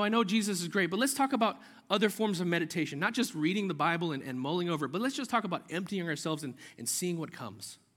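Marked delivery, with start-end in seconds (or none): none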